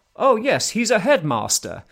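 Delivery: put-on very clipped British accent, swooping pitch. Retelling a man's line from a video clip, in a clipped British accent. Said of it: "in a very kind of clipped British accent goes".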